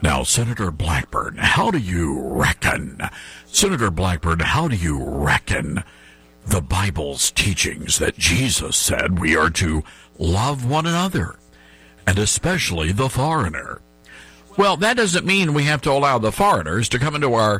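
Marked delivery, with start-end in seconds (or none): 0.0-13.8 very low, deep, put-on news-anchor delivery. Speaker mocking a TV interview with Senator Blackburn, in Joe Birch's fake news-anchor voice. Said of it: "he's got the fake news anchor voice on".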